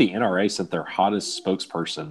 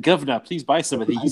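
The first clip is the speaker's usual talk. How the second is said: terrible, pitched-up fake British accent; 7 semitones higher than usual. Imagining what the English-speaking lass said, in a terrible fake British accent. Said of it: "Terrible, terrible British accents".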